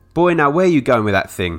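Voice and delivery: hollering, loud and high. A bluesman calls out to Robert as he reaches the stage, hollered. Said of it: "Hollered Son to Robert".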